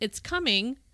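cool, calm, level, unbothered tone. Retelling what a woman in labor said: imitating a quiet calm voice. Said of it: "very kind of quietly".

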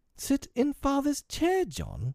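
appalled, shocked, scandalized, very high pitch. Narrator reads Wendy answering John's request for the chair; scandalized. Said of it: "Wendy was scandalized".

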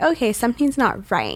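ordinary talk

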